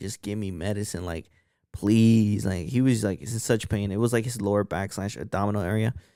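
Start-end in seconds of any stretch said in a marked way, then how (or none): 0.0-2.5 mock-begging, desperate pleading voice. Speaker recounts a man in pain heard across the hospital hallway, imitating someone begging. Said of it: "screaming, begging".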